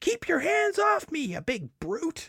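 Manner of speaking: play-acted, very high-pitched protesting cry. Reading a comic aloud, the Sheik of Araby shouts: acted shout. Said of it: "she shouts".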